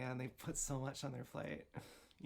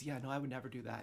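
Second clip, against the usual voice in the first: put-on voice at a faster pace. Speaker describing a kind of person, doing an impression of someone denying it. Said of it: "I actually just did that impression".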